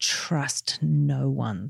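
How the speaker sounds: imitated speaking through gritted teeth. Quoting what cynical business people told them: imitating speaking through gritted teeth. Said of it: "through gritted teeth".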